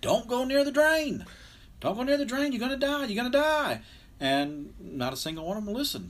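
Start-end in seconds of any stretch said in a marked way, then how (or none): 0.0-3.8 very high, loud, put-on top-of-the-lungs scream. Speaker retelling what they screamed at the top of their lungs, retelling a scream. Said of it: "I'm screaming at the top of my lungs".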